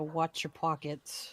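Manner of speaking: low muttering under the breath. From the back of the group, a character warns the others, muttered under breath. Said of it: "under my breath".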